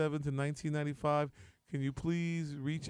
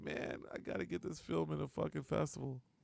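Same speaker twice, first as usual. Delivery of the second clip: mock drunken crying, quieter; 6 dB quieter than usual. Retelling what the other speaker said one drunk night: imitating someone drunk and crying. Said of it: "you were real drunk and crying one night".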